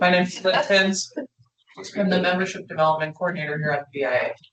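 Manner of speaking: speaking around a mouthful of food. Introducing themself in a round of introductions, talking with mouth full. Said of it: "a mouthful of food".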